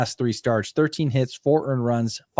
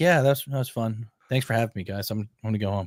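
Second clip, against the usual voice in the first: calm, flat monotone with no emotion at all. Describing a calm guy right after his performance, imitating a calm, flat guy. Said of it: "he kind of talks like this the entire time".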